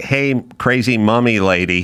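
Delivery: plain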